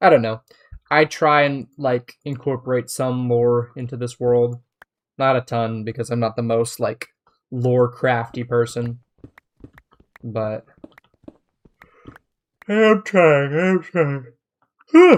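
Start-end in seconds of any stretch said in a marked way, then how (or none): 10.2-15.2 very slow, raised, drawn-out yawning speech. Talking about adding lore to their world, yawning while talking. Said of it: "Excuse me for yawning".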